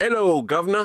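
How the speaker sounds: imitated very loud shout. Retelling how people greeted the speaker every day in public: retelling a greeting shouted loudly. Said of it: "in the loudest voice imaginable".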